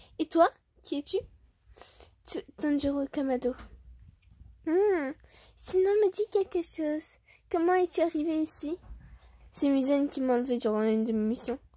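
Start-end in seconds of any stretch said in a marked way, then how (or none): 0.2-1.2 put-on fully girly, feminine woman's voice. Voicing Douma introducing the character to a captured human; girly female voice as Douma. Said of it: "je fais la voix d'une meuf".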